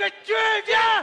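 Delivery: very high, loud, furious yelling.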